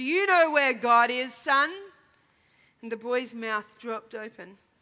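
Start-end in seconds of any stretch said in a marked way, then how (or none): 0.0-1.7 stern, severe, louder and slower. A clergyman questioning a young boy, stern. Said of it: "asked him sternly".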